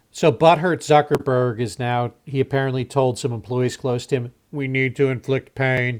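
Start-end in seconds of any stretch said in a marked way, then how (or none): 4.6-6.0 put-on emotionless, robotic voice. Acting out what Zuckerberg apparently told employees close to him, in an emotionless robotic Zuckerberg voice. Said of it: "in his emotionless robotic voice".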